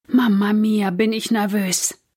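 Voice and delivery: ordinary talk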